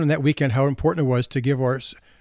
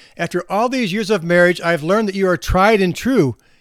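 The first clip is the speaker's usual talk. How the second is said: put-on, louder, raised voice; 4 semitones higher, 4 dB louder than usual. Retelling a wife repeating herself to her hard-of-hearing husband, in a louder voice. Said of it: "And she said in a louder voice".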